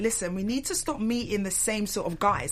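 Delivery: ordinary talk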